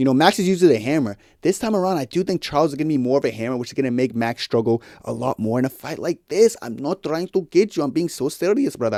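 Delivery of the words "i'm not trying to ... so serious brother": put-on Spanish accent, quieter. Speaker previewing a Max versus Charles fight, in a Spanish accent. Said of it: "I'm talking in Spanish accent".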